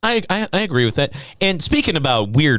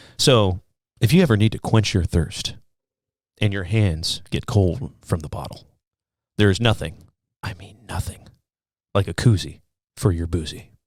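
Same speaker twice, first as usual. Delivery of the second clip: low, sultry, seductive voice; 6 semitones lower than usual. Doing a little promo for a koozie, in a mock sexy voice. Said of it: "That's my sex voice".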